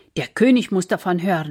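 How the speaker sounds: ordinary delivery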